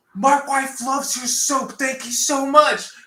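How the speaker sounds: very high, screamed-out line. Retelling a line called out while passing behind a customer: imitating someone screaming. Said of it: "he screams out".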